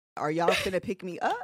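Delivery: ordinary delivery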